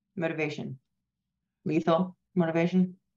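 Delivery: acted stoic, expressionless, flat deadpan delivery. A player shows how Jason reacts to motivation, imitating Jason's deadpan. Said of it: "it's just deadpan".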